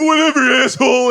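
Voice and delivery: high, loud, mock screaming.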